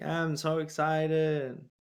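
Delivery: put-on unexcited, flat child voice. Imitating the kid from Ryan's Toy Channel: imitating the Ryan's Toy Channel kid. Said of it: "I sound like the kid from the Ryan's Toy Channel".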